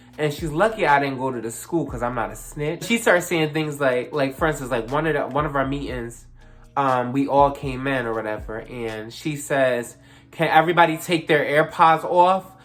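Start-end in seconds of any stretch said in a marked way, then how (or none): 10.3-12.4 put-on snide, nasty, emphatic, raised, pointed voice. Retelling what the lady said at a meeting: imitating a nasty tone. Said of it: "emphasized with a nasty ass tone".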